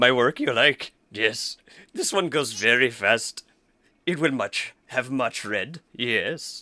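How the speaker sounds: squat, stout orc voice. Game master voicing an orc who stands up to his full height, orc character voice. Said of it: "the orc stands up to his full height, a stout 4 foot tall, / the orc stands up to his full height, a stout 4 foot tall, [name], more contacts you have brought me. Oh, Racers they are. Well, not exactl".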